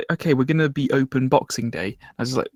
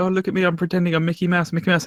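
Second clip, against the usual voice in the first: mock forced cheerful mascot voice, higher; 5 semitones higher than usual. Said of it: "they go around saying, like".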